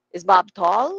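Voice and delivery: rising lift in pitch on "tall". Teaching intonation of English yes-or-no questions: rising at the end on tall. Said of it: "Pataas yon".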